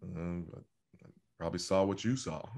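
acted clipped coach voice. Answering a request for an impression, quoting a reply: Belichick impression. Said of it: "give me a Belichick impression".

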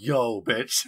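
offhand, tossed-off delivery in character voice. Describing a character sitting in his soul room, imitating Yami Yugi. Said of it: "he's like".

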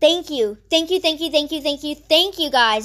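fast, teary, happy gushing, near crying. Thanking viewers for reaching 400, near happy tears. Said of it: "I'm gonna cry. A happy cry".

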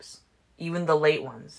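ordinary delivery, nothing marked

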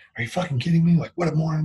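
mock muttering under breath. Retelling typing at work early one Sunday, acting out cursing under the breath. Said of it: "or under my breath and going".

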